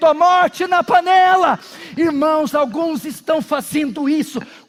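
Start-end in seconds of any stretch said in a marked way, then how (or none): 0.1-1.6 sudden loud, high shouted cry. Retelling a story where someone suddenly cries a warning: imitating someone shouting. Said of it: "e alguém gritou".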